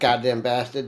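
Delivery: put-on New York accent. Reacting to another speaker's remark: New York accent. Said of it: "you do have a New York, New York accent".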